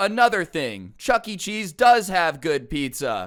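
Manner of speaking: high, slow, dumb-sounding late reply. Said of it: "fifteen minutes later go".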